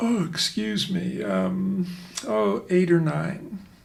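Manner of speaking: play-acted, spoken through a huge yawn. The speaker acts out what a patient says later in treatment, imitating a big yawn. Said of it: "with a big yawn".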